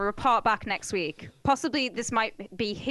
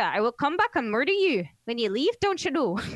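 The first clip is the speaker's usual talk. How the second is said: put-on Minnesota-accented delivery. Reading a news story about a threat at a bar, in a Minnesota accent. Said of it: "I wonder if I can do this in Minnesota".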